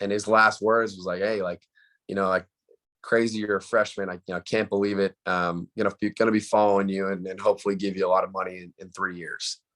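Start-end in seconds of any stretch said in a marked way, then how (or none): none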